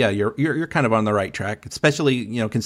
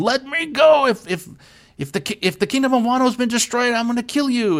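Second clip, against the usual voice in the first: put-on annoying yell, much higher pitch, slower; 14 semitones higher than usual. Describing a tied-up character, the speaker retells Raizo's annoying yell. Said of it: "annoying voice, and he's yelling at them".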